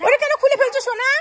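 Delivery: high, loud calling out.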